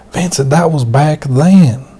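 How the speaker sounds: laid-on-thick, exaggerated Southern American drawl. Quoting a friend about money for the casino, exaggerated southern American accent. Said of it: "I'm kind of exaggerating the southern accent".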